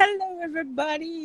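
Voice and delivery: high, sweet, angelic voice. Imitating the other speaker's usual greeting: imitating a sweet angelic voice. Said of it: "The way you're always like".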